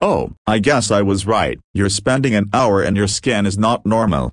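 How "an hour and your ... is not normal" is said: ordinary delivery, nothing marked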